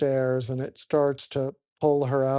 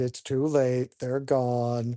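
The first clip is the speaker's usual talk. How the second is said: ordinary talk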